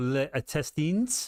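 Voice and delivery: best-try put-on French accent on intestines. Mid-explanation, saying one term in a put-on French accent. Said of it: "that's my best French accent".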